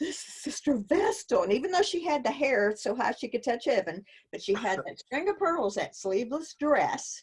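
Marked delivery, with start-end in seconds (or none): 0.0-1.4 put-on mortified gasp, higher. Retelling seeing Sister Vestal as a child: retelling own mortified gasp. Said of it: "I remember just being mortified".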